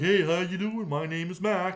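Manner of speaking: voice spoken as a talking dog. Retelling how the visiting dog greeted everyone: voicing Mac the dog.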